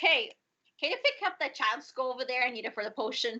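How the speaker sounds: mock short, brusque, sharp, curt delivery. Voicing a character who snaps at another player's character: snapping sharply. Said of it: "snaps at".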